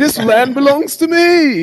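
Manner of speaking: put-on British accent. Mocking how British voices sound important, imitating a British voice. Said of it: "sound like they about to conquer the world".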